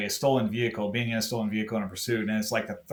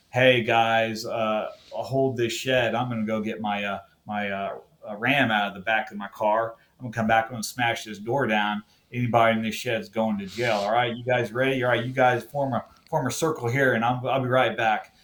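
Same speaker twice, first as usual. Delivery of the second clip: plain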